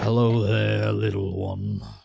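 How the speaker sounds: creaky, rough, swooping huge giant voice. Voicing a towering figure who looks down at a player: towering quartermaster character voice. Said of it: "As this individual towers over top of you".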